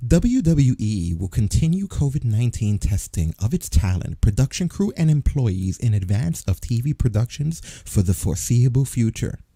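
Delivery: robotic, canned, automated recorded announcement read. Reading WWE's statement aloud, in an automated mall kiosk voice. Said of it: "I love how you said that like an automated voice in a mall kiosk".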